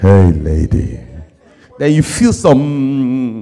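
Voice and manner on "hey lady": deep, very low, dropped bad-boy voice. Speaker acting out a bad boy greeting a lady: bad boy dropping his voice. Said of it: "he drops his voice".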